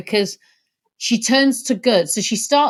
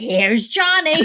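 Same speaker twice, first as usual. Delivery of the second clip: mocking put-on announcer voice; 3 semitones higher than usual. Teasing another speaker's impression by comparing it to a famous line. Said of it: "you make him sound like".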